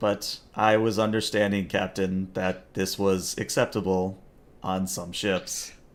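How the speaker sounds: flat monotone, no inflection, one level note. Narrating a game scene, voicing Tin replying to the captain: Tin's monotone voice. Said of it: "in his monotone voice".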